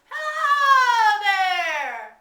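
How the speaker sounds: high, slow, loud, stretched-out holler. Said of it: "you're gonna holler across the mountains".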